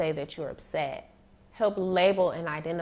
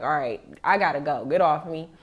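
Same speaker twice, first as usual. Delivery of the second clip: firm voice growing stern and raised; 2 semitones lower, 5 dB louder than usual. Retelling how a dad at drop-off spoke to his crying daughter: imitating a dad getting stern. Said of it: "he was starting to be stern".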